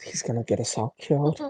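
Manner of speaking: hushed, muttered whisper under the breath. Speaking in character during a group conversation: whispering under breath. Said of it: "I'm gonna whisper under my breath".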